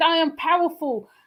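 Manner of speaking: mock voice of a scorned woman. Quoting an interview where she insists on her power: imitating Janae as a scorned woman. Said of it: "Janae was a woman scorned".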